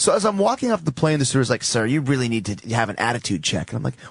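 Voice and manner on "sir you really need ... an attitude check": normal talking voice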